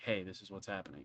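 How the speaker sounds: soft, hushed half-whisper. Acting out a character relaying news away from a crowd: half-whispering.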